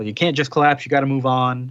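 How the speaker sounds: ordinary delivery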